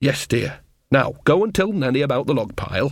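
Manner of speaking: ordinary delivery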